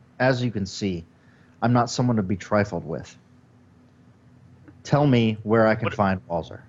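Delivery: very serious and grave. Voicing a character warning tavern dwarves, very serious. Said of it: "very serious look on my face and say".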